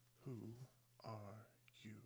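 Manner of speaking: drowsy, lazy-sounding, languid, sleepy and soft. Reading the story aloud, the Caterpillar takes the hookah out to address Alice: languid, sleepy voice. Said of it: "addressed her in a languid, sleepy voice".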